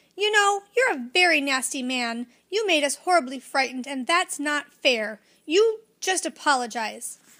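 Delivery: cross, indignant tone. Reading a little girl's reply to a man who frightened the children: angry voice. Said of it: "said in an angry voice".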